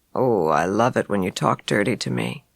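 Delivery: husky, very deep, very low seductive voice. Narrating a story, reading Bud's reply in his huskiest voice. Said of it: "responded in his huskiest voice".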